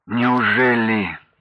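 groaning. In a story, a man answers what he has just been told, moaning. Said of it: "простонал Анатолий".

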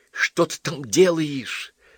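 slow, high, drawn-out hiss. Polovinkin asking Asya, who has just called him beloved, what she's doing: hissed. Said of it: "зашипел Половинкин".

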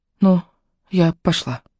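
small, thin little voice, cracking and breaking. Leonie, speaking to Ray: thin, breaking little voice. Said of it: "сказала тоненьким срывающимся голоском".

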